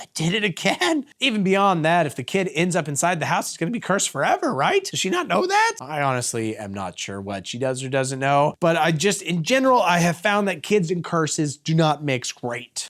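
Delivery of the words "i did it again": put-on trembling, shaky, unsteady voice, slow. Retelling a late-night call from Dave: imitating Dave's shaky voice. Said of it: "says with a shaky voice".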